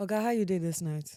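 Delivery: unconvincing put-on Nigerian accent. Speaker answering a mock nigerian policeman, in a bad nigerian accent. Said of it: "your accent is not, it's not convincing".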